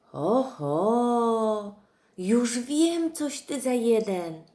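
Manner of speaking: very slow, high, loud exclaiming, oho drawn long. Narrator reads Masha as she finds the egg in the bear's book, exclaimed. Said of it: "Wykrzyknęła Masza".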